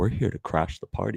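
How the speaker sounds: put-on deep voice, nonchalant and cool. Mocking a player's pre-match line: mocking Joker-like deep voice. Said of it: "Why are you speaking like the Joker?".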